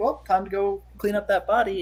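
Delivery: normal talking voice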